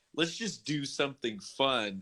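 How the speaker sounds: ordinary delivery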